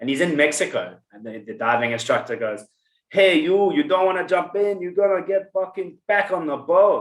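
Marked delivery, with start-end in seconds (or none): 3.1-7.0 put-on Puerto Rican accent, pitched up. Act out the diving instructor in Mexico speaking to Lucas, in a put-on Puerto Rican accent. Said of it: "that's my Puerto Rican accent".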